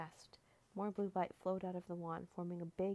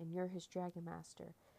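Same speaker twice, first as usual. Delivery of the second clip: ordinary delivery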